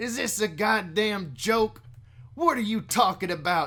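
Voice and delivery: put-on country accent, loud and high. Speaker reads a character's lines aloud, now in a country accent. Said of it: "I'm doing a country voice now".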